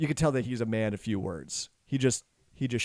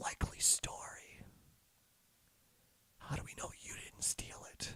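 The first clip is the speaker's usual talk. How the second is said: hoarse, whispery, very hushed, barely audible voice. A voice speaks from the doorway after the hug, raspy, whispery voice. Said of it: "a raspy, whis- whispery voice".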